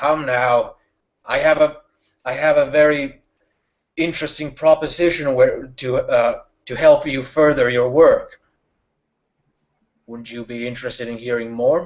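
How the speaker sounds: muffled, muted, covered-sounding speech. Storyteller voicing a figure heard as the player walks on: muffled voice. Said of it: "this kind of muffled".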